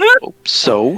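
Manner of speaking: low, loud character voice.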